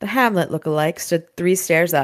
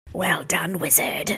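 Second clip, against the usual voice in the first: quiet, dry, raspy hissing whisper; 5 dB quieter than usual. Reading a vampire's line aloud from a novel: raspy hissing whisper. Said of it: "Her voice sounded raspy, a quiet hissing whisper".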